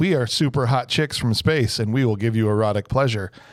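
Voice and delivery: ordinary talk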